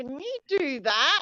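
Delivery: high, nagging, whiny voice. A wife shows the voice her husband hates: naggy whiny voice. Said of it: "Like that".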